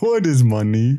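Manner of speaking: put-on bear voice. Joking about a bear paid to be killed: bear voice. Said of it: "Can you do the bear again?".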